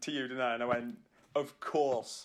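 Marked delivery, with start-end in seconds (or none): none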